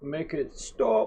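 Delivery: put-on English accent. Reacting to a strange game map with others: british accent. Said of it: "With the Brit-, British accent".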